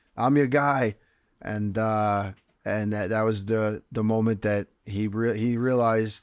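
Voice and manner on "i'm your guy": loud yell projected across a distance. Describing a photo of himself, re-enacting yelling across to someone, retelling his own yell. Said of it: "and I'm yelling across to Sean Shelby".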